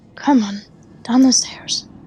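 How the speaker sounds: very gentle, careful, coaxing tone. Voicing a character guiding a drunk companion down stairs: very gently. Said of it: "he's just very gently gonna go".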